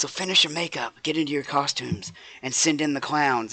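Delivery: strained, very quiet half-whisper under the breath. Voicing the frail old professor speaking to the frozen performers: strained, very quiet half-whisper. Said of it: "a very quiet whisper".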